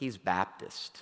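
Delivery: mock mutter under breath. Retelling a relative at the table looking over to another person; retelling an under-breath remark. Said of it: "kind of under their breath".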